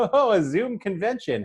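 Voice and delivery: high, slow joking tone. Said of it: "said in a sort of, like, joking tone".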